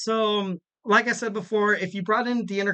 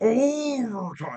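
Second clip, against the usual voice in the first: bad booming announcer voice, slow and drawn out. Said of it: "that was a bad boomer voice".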